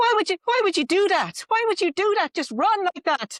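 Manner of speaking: loud, very high, baffled put-on Irish accent. Retelling how locals questioned a friend for running: put-on Irish accent. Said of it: "Excuse my Irish accent".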